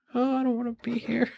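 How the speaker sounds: muttered, under-the-breath mumbled aside. Voicing a character who doesn't want to be here: mumbling to himself. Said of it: "mumbles to himself".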